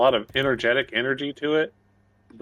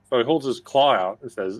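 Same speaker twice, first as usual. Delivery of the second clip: ordinary delivery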